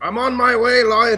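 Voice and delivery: loud, high-pitched shouting.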